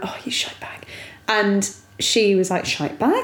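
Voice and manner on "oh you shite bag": re-enacted mutter under breath, much quieter. Parent retelling what was muttered at the dog on the stairs, under the breath. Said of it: "under my breath just went".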